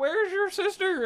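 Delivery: put-on very high, slow, drawn-out drunken calling out. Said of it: "So he was like".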